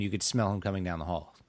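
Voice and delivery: ordinary talk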